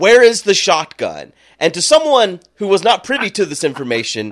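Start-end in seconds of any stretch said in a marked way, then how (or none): 0.0-1.3 loud, high-pitched yell. Retelling being beaten by the brother's dad: imitating someone yelling.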